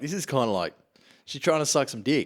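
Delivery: normal talking voice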